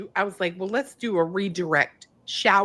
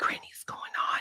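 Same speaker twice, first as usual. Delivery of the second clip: barely voiced, hushed whisper. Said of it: "he was trying to whisper".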